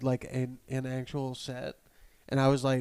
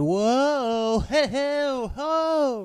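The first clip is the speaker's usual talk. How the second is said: very high, very slow goofy show-host hollering; 12 semitones higher, 7 dB louder than usual. Imitating a pre-show host, like Jack in the Box: imitating the host's goofy exclamations. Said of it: "like Jack in the Box".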